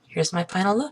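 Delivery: softly spoken. Closing a hair-styling video for viewers, softly spoken. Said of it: "[softly spoken]".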